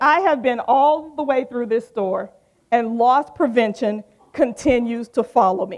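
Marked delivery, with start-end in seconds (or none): none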